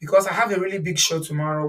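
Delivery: ordinary delivery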